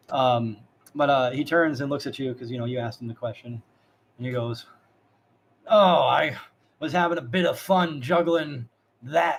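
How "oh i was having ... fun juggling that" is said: play-acted, extreme, dripping sarcasm, loud and slow. Retelling how he answered the question he was asked, retelling an extremely sarcastic reply. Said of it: "that is extremely sarcastic when he says it".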